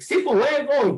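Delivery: high-pitched, barked shout. A parent retells shouting at their eighteen-month-old heading for the pool: retelling a shout. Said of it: "I jumped on my feet and I shouted at him like".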